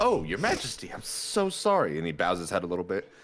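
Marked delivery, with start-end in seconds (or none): 0.0-2.0 small character voice, higher pitch. Voicing a small character shaking hands and apologizing: Breakaleg voice. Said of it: "as he gives you a handshake, he says".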